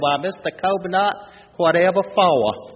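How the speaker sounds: put-on Southern belle accent. A parent retells how the youngest daughter answered, doing a Scarlett O'Hara impression. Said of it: "got in her favorite Scarlett O'Hara stance".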